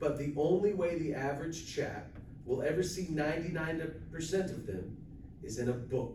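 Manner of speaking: ordinary talk, nothing marked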